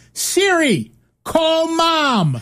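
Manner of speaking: loud high-pitched yelling voice.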